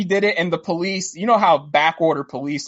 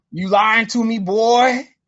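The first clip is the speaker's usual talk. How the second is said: put-on drunk man voice, higher; 4 semitones higher than usual.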